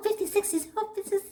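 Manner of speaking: very high-pitched, squeaky voice. Quoting Charlotte about being fifty-six: high Charlotte voice. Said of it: "Literally in her high voice".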